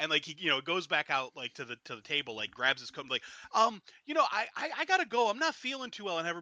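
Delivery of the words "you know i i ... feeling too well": very high, loud, stammering, flustered panic. Acting out a character rushing to leave a table: acting panicked. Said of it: "he's kinda panicking".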